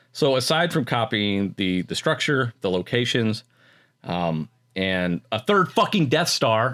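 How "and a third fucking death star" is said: slow, impassioned, worked-up outburst. Critiquing a film's lack of creativity, passionate. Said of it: "I'm sorry, I'm getting passionate".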